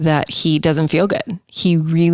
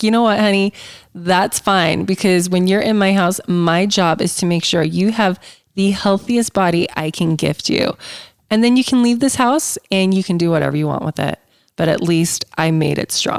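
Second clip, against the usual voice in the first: ordinary talk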